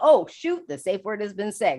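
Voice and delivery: ordinary talk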